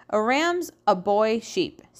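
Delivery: ordinary delivery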